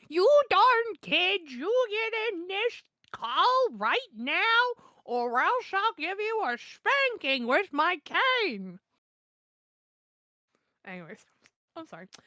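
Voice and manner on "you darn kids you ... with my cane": put-on very slow, high, cranky old-granny scolding yell. Voicing a granny character in a group call, granny voice yelling. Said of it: "Granny yells".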